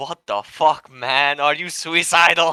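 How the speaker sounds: agitated, upset, loud, rattled outburst. Voicing a character who inspects a broken gun: rattled and upset. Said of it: "it got him so rattled up".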